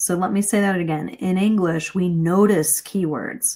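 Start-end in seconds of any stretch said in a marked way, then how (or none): 1.9-3.6 "notice" stressed hard, slow and raised in pitch. Explaining how english keywords are noticed, with stressed 'notice', slower and higher. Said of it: "Notice was the word that I emphasized".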